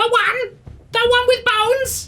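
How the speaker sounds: shrill, very high, loud raven-flock creature voice. Answering who she is, in a raven flock voice. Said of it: "Mark's trying to think what's his raven flock voice".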